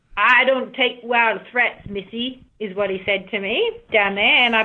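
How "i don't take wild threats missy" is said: really poor, fake put-on Texas accent. Quoting what a man said down on the beach, really poor Texas accent. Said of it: "I'll give you a really poor Texas accent".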